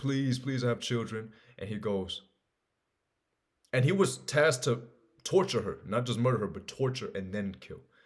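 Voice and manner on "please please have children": mock sobbing, crying, pleading voice. Retelling a samurai story, voicing the condemned woman's plea while imitating her crying. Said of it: "she's crying and she's crying".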